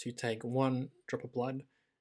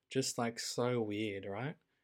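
plain

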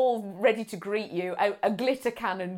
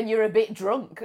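usual speaking voice

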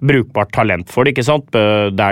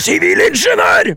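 mock shout, pitched high. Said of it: "komme der og rope".

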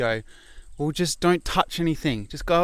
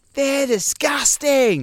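put-on very high-pitched, loud shriek; 11 semitones higher, 5 dB louder than usual. Retelling what a wife yelled about toilets: imitating a woman screaming. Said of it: "at the top of her lung, like, screaming".

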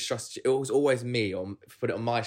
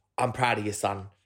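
put-on South London geezer accent. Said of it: "bald, geezer".

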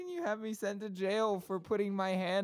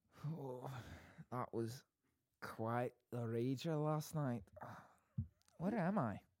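fake, put-on Scottish brogue; 7 semitones lower, 8 dB quieter than usual. Playing someone waking up on the wrong train: put-on Scottish accent. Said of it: "I'm Scottish".

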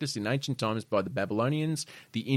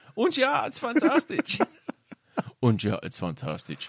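fake German accent, much higher; 11 semitones higher than usual. Speaker trying a German accent after being asked to, put-on German accent. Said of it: "Can you possibly ever do a German accent".

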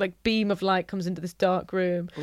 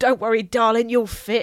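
put-on aggressive voice, higher pitch; 3 semitones higher, 4 dB louder than usual. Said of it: "they're very aggressive when they're in character".

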